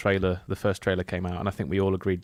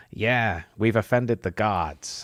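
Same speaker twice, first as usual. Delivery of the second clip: put-on Brooklyn street accent. Mocking a film character who breaks the immersion; Brooklyn accent. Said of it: "someone with a Brooklyn accent go".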